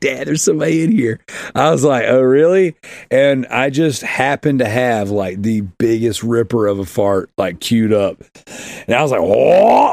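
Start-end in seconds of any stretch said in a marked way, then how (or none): 0.0-1.2 mock giggly child voice, faster. Retelling how his son spoke to him; imitating son giggling. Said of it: "he's giggling, he's like".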